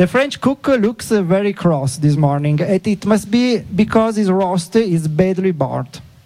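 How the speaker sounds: slow, Italian-accented English mixed with Italian words.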